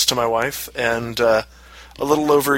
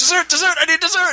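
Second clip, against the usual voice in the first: very high, rushed, frantic panic. Retelling a meal out with her, the speaker acts out their own past panic. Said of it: "I'm like panicking at that point".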